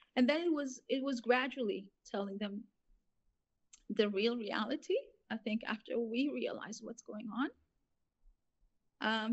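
choked up with tears, voice breaking. A speaker talking about their children in conversation, crying, voice breaking. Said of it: "Sorry for crying".

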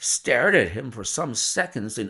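ordinary delivery

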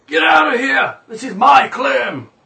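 very loud, raspy, harsh, hostile, unwelcoming yell. A narrator voices a halfling in the room's corner: raspy, uninviting yell. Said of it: "a raspy, uninviting voice yells".

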